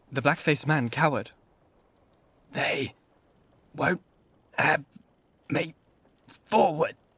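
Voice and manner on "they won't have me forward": slow, hoarse voice with halting, broken phrasing. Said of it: "He spoke slowly, with a queer, hoarse quality in his voice".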